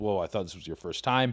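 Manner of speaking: ordinary talk, nothing marked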